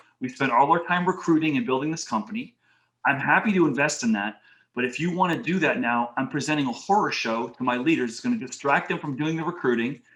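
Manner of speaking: ordinary talk, nothing marked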